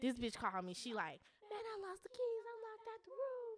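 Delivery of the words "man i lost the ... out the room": high, put-on panicked pleading voice. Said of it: "make up a lie, panic".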